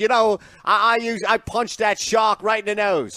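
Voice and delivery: put-on clumsy Australian accent. Quoting an imagined surfer from Australia: attempted Australian accent. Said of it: "I can't do Australian, uh, accent".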